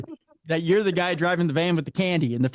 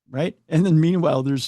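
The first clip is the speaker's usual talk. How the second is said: ordinary talk, nothing marked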